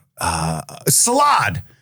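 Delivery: put-on panicked, hesitant delivery. Retelling placing a food order, acting out a panicked answer. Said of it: "I'm panicking".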